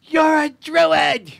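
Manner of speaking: tiny creature voice yelling, very high. The game master voices a tiny pebble creature yelling up at the druid: tiny pebble creature yelling. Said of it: "and yells up at you".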